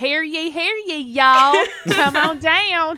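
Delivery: heavy, laid-on Southern accent. Imagining greeting people walking into the restaurant while working there, thick southern accent. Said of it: "laying on my like Southern accent real thick".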